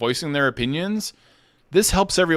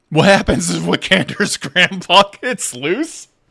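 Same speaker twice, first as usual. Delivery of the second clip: speaking through laughter, louder; 3 semitones higher, 5 dB louder than usual. Reading a chat question aloud, laughing while talking. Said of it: "I'm sorry I'm laughing".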